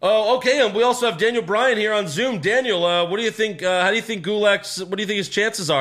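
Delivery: sports commentator voice. Retelling how the commentators brought in a guest on Zoom: imitating the commentators. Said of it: "They're like".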